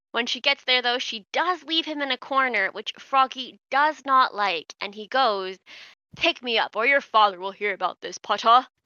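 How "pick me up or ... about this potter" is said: put-on, sneering voice. Reading a story aloud, the frog's line in a Malfoy voice. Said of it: "I had to do a Malfoy voice".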